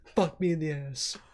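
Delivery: high-pitched younger voice.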